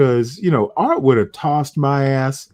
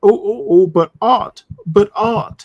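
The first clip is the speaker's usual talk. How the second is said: high, mocking put-on British accent; 7 semitones higher than usual. Complaining about someone's little British accent, the speaker mimics it in a mocking British accent. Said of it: "that little British accent you got".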